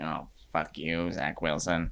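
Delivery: slow, unhurried, drawn-out thinking-aloud voice. Acting out what a smirking coach thinks after interceptions: Bill Belichick impression. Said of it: "that was a good Belichick imp-".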